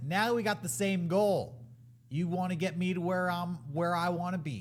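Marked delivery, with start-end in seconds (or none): none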